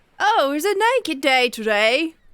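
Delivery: high, distant, drawn-out shout through a door. As a door opens onto a party, the narrator voices a distant shouting voice. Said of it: "a distant voice shouting like".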